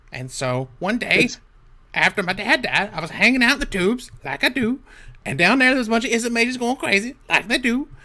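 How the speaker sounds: goblin wizard character voice. A player tells her goblin wizard's backstory in character, speaking as a goblin wizard. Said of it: "So [name] is a goblin wizard of the Izzet Guild. / I'm not too tall, 3 feet, 10 inches, sometimes 11 when I'm excited. And then there's 50 pounds of me. I got green skin. I got no hair. That fits. And".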